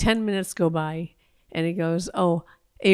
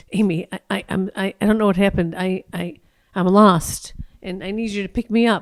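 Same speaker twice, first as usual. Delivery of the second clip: mock panic, loud, stumbling and stammering over words; 5 dB louder than usual. Retelling a late-night call from her brother: imitating panicked brother. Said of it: "He sounded really panicked".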